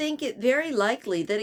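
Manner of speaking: ordinary delivery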